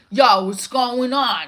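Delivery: laid-back, slight New York accent. Recalling a character from the speaker's own show, in a New Yorkish accent. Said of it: "It was like New Yorkish".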